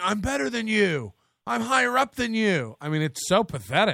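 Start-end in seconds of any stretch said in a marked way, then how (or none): 0.0-2.8 mock screaming, higher pitch. Describing a comedian screaming at a guy with a day job, retelling the scream. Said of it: "him just screaming".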